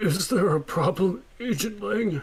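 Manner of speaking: put-on high, wavering, gentle old man voice. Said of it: "I get to do a nice old man voice".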